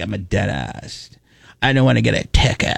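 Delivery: heavy, very low, rough, creaky vocal fry. Mocking a dentist woman heard on Hot Mic, imitating her vocal fry. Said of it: "I didn't really appreciate her vocal fry".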